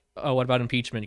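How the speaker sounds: ordinary talk, nothing marked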